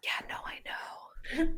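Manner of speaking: very quiet, slow, hushed whisper. Voicing Leon answering a secret: whispering back. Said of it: "whispers back".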